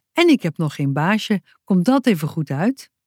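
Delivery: ordinary delivery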